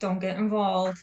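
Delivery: put-on mumbled muttering under the breath. Speaker retells a girl's remark during coloring, imitating a mumble under breath. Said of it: "she just mumbled under her breath".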